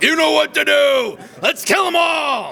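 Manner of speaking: very high, excited, put-on top-of-lungs battle cry. Reminding someone what they shouted at a convention years ago, retelling a shout. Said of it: "you shouted at the top of your lungs".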